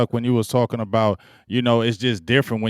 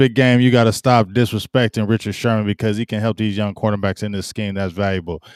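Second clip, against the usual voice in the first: ordinary delivery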